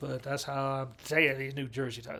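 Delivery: ordinary delivery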